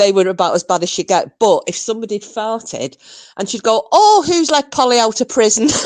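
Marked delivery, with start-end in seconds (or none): 3.9-5.7 little, sweet, pitched-up Southern Irish lilt. Recalling what a woman at home said when someone farted: sweet Southern Irish accent. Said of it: "This little sweet Southern Irish accent".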